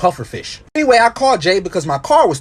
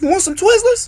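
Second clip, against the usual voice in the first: put-on very high little boy voice. Retelling a voice heard one last time while storming off, imitating a little boy's voice. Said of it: "heard the voice one last time and it went".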